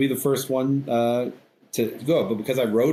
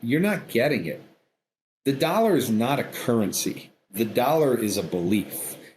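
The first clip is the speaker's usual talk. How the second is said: put-on, insistent, finally raised voice. Recalling what a man finally told him in an argument: retelling a raised voice. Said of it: "he finally kind of raised his voice".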